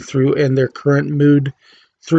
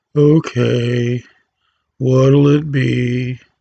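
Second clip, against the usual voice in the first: weary, bored, slow, drawn-out heard-it-all voice. Voice lesson demo: playing a bartender who's heard it all, bored bartender voice. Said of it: "Like you're the bored bartender".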